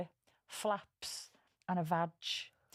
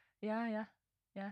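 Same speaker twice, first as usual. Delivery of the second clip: mock unenthusiastic, quieter delivery; 4 dB quieter than usual. Podcast host retells how Ra answered when asked if ready, mimicking Ra's unenthusiastic reply. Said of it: "Bit of enthusiasm".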